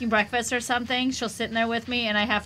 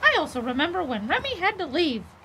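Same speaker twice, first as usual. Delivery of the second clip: high, swooping, sing-song cartoon voice; 5 semitones higher than usual. Reading a game character's dialogue aloud on request: Mickey voice. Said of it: "read it in his voice".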